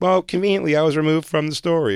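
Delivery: ordinary delivery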